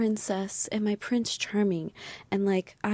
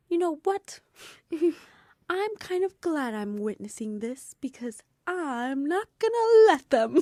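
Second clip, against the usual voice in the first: put-on bright, proud, chipper, pitched-up delivery; 6 semitones higher than usual. Quoting the listener back to them, the speaker mimics a proud, chipper voice. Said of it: "in like the most proud, chipper voice".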